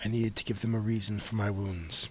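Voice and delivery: very low, very quiet half-whisper. The narrator voices a character half-whispering into the player's mind, half-whispering. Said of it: "he whispers in your mind".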